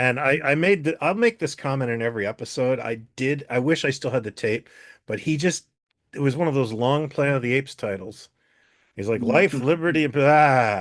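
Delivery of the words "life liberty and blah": slow, lippy comic delivery with drawn-out "blah". Retelling Mark Daly reading a long Planet of the Apes title: lippy, funny Mark Daly impression. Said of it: "He'd get really lippy and funny".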